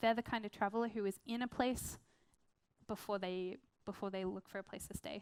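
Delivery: ordinary delivery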